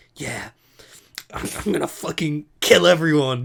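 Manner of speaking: secretive, hushed half-voiced stage whisper. Mimicking how the listener used to say offensive things, imitating a half-whisper. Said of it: "like you would whisper".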